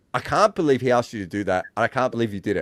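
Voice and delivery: laughing hard, words broken up by laughter. Retelling what someone said in the bar later: imitating someone laughing while talking. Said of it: "just pissing himself laughing".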